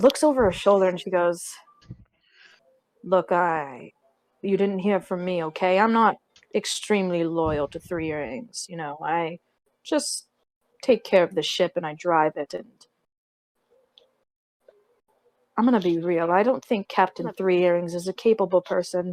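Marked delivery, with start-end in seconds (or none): 3.0-19.1 low, hushed, confiding voice under the breath. Retelling what a woman said after looking over her shoulder, low hushed voice. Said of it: "Why would you say that in a low voice?".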